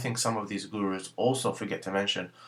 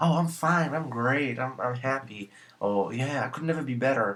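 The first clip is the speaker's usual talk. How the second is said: put-on American accent, drawn out; 4 semitones higher than usual. Showing how americans answer when asked how they are, in a fake american accent. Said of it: "that's just fake American accent".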